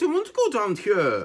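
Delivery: put-on Welsh accent, high, swooping lilting tune. Speaker quotes a scene from Gavin and Stacey: Joanna Page Welsh accent. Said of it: "I can do a Welsh Welsh accent".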